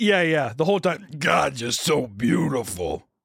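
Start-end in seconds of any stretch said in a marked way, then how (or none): 1.2-3.0 wild, slow, heavy, dragged-out drawl. Retelling a cringy interview, imitating Vin Diesel's voice. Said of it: "His voice is so wild".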